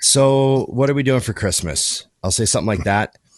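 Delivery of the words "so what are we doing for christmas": mock exhausted, fed-up, already-annoyed tone. Retelling asking Emily about Christmas plans: imitating own exhausted, annoyed tone. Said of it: "a real exhausted, already annoyed tone".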